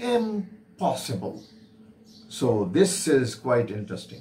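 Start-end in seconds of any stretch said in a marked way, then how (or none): 0.0-1.4 "impossible" said with stress on first syllable "im". Showing someone stressing the very first syllable: stress on first syllable im. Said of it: "When somebody stresses on the very first syllable".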